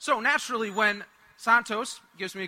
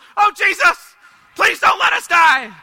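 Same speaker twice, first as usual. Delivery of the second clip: very loud, high-pitched, top-of-the-lungs shout; 8 semitones higher, 14 dB louder than usual. Retelling a man's prayer as the plane suddenly drops, shouting at the top of his voice. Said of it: "at the top of his voice".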